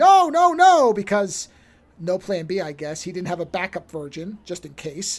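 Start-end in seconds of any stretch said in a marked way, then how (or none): 0.0-0.9 screaming, high and loud. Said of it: "starts screaming".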